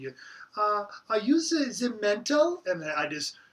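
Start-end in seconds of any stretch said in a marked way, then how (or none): 1.1-2.6 put-on French accent, high and raised pitch. Retelling what the person installing the live stream asked: imitating a French accent. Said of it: "she had a French accent".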